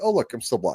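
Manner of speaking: normal talking voice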